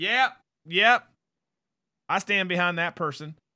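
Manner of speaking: sudden put-on American Southern accent. Imitating people who just go along with it: put-on southern accent. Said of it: "I don't know why I went Southern there".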